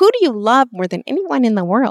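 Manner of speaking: rough, high, loud put-on little-boy voice. Speaker quotes a question, imitating an 8-year-old boy's voice. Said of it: "imitation of an 8-year-old boy's voice".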